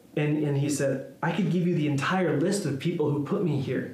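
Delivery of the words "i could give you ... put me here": ordinary delivery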